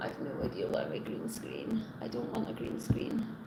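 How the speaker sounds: soft whisper, said to self.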